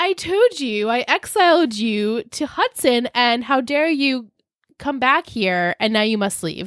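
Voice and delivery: grand, lofty, godlike, all-powerful delivery. Retelling a character ordering another to leave: imitating someone speaking like God. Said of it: "Blair then speaks like she's fucking God".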